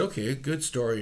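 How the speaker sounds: normal talking voice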